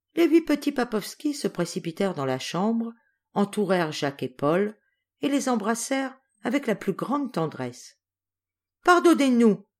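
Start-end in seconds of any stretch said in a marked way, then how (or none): 8.9-9.6 high exclaiming cry, several voices together. Four older children, crowding round two boys, all at once: crying out together. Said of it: "S'écrièrent tous à la fois les quatre grands".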